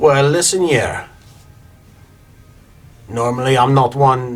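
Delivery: put-on French accent slipping in instead of Scottish. Speaker voicing a character in a game, accidental french accent. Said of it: "I went totally French again".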